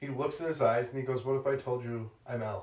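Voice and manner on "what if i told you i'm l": calm, level, unraised, perfectly even monotone. Retelling L meeting Light for the first time, imitating L's even tone. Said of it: "speaks in just a very even tone".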